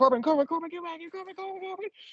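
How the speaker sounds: very high, frantic, rapid-fire repeats, acted out. Retelling how he calls after Corbin, imitating him stressed and rushing. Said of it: "he's too stressed out and saying it too fast".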